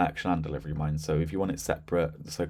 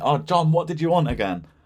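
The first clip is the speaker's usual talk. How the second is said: raised, high-pitched voice. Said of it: "rather than shouting over going".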